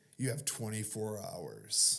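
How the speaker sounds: put-on sneering delivery. Retelling a mock robbery bit done for a crowd, retelling a sneer. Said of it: "with like a sneer".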